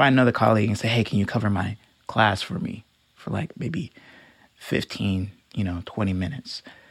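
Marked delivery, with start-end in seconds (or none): 0.9-6.6 put-on tearful voice, halting, barely getting words out. Retelling asking a colleague to cover a class: imitating own tearful asking. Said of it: "it's like tears in my eyes".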